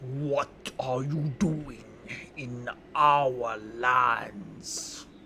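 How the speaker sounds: deep bass giant voice, calling out. Voicing a giant calling out to the listener in its lands: bass giant voice. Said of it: "you hear with a no- similar bass".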